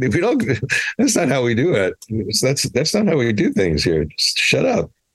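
high, puzzled, easygoing mild voice. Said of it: "the Lobos guys would be like".

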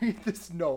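high, slow laughing.

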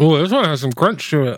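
talking with mouth full of food. Tasting a new flavor while still eating, talking with mouth full. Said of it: "I just got a hold of meat in my mouth".

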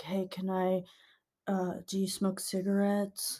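soft, mumbled, stumbling and halting delivery. Retelling a stranger asking for cigarettes: imitating a mumbly man. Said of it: "he's very mumbly".

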